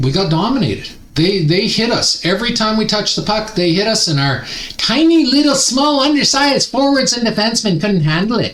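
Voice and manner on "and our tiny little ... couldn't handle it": high, squeaky little gnome voice. Recapping a hockey loss, describing the team's small forwards in a gnome voice. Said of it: "that was my gnome voice".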